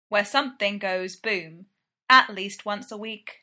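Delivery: ordinary delivery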